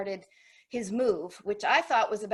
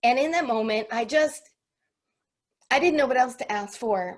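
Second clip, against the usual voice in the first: louder voice, full of feeling, emotional; 2 semitones higher, 6 dB louder than usual. Recounting feeling defeated on a harbor walk, the speaker is getting emotional. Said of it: "I'm going to get emotional now".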